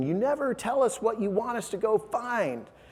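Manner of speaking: high-pitched, mild mock shout.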